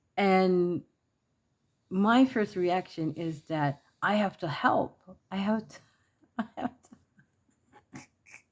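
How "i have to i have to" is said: high, slow words spoken through laughter. Retelling a first reaction of having to help, laughing while talking. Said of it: "I'm laughing at myself".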